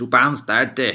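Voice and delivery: put-on proper Scottish accent, very loud. Quoting what a cabbie said after a pub trip, in a proper Scottish accent. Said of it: "with a proper Scottish accent, which is this".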